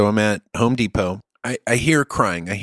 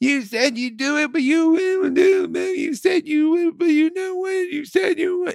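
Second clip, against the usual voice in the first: put-on very high, weepy, crying, whiny kid voice. Retelling an eight-year-old's complaint while crying: imitating a crying child. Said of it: "The 8-year-old's crying".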